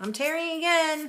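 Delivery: very loud, high-pitched shouting at full volume. Announcing that you are tearing the paper again: yelling. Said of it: "I don't know why I'm yelling that".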